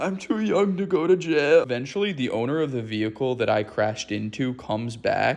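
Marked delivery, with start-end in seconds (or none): 0.0-1.6 put-on, high-pitched sobbing with a pleading tone. Retelling being stopped by a cop after a crash, the speaker retells crying. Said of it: "crying to him".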